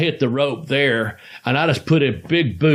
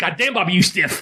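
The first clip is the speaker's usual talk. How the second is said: high-pitched, put-on Japanese accent; 5 semitones higher than usual. Retelling a story, quoting what Sasuke said: Sasuke impression, Japanese accent. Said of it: "I can't do a Japanese voice very good, but this voice I've never messed it up".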